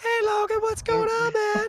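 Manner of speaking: voice pushed very high. Contrasting with a low-voiced man, the speaker mimics their own far higher voice. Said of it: "am like fifteen octaves higher than that".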